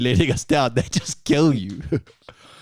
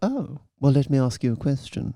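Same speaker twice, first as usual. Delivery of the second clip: unsettling, creepy tone of voice. Suggesting a question to ask a partner who gets home, creepy voice. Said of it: "Less creepy voice though".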